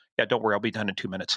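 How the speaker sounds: under-breath mutter. A trooper retells what the defense attorney said to him, muttered under breath. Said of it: "under his breath".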